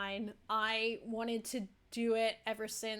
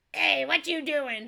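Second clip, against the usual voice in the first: high, loud put-on lady voice; 5 semitones higher, 8 dB louder than usual. Showing a voice used for a lady in the last trial: voice of the lady from last trial. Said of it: "like that lady in the last trial we did".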